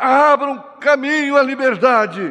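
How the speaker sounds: stirring, high, ringing, rousing delivery. A man runs with his hands in the air; shouted again. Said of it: "E ele gritou novamente".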